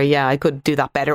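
plain

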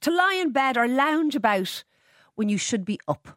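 put-on Scottish accent. Radio host reads a dictionary definition aloud on air: scottish accent. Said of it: "I'm really going to read that in the Scottish accent".

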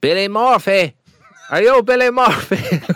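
put-on Cork accent. Asked to show the Cork accent he has been practising, in a Cork accent. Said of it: "I've been practising me Cork".

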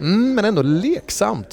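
high, slow, drawn-out, playful sing-song. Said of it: "säger nästa person".

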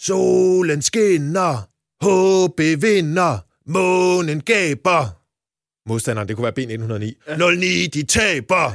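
very loud shout, as if carrying across a stadium. Remembering a man who shouted before every match, the speaker repeats it: shouting across a stadium. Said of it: "råbte han ud over hele stadion".

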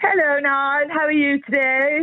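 affected posh voice. Just brought into the conversation, greeting another speaker in a put-on posh voice. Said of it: "Why is she putting on a posh voice?".

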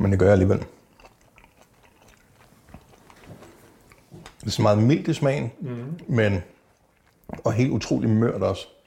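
speaking with mouth full of food. Tasting the sous-vide meat and describing it, talking with mouth full. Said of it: "Nu må man ikke tale med mad i munden".

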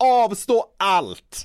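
very slow, emphatic, drawn-out delivery.

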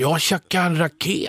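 put-on Stockholm Swedish accent. Retelling what Dad said when he came home, in a Stockholm accent. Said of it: "han snackar stockholmska".

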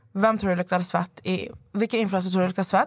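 ordinary talk

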